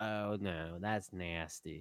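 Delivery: very low, very soft, murmuring cartoon voice. Trading cartoon impressions with others, Cleveland impression. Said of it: "Cleveland goes".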